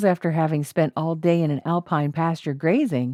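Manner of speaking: usual speaking voice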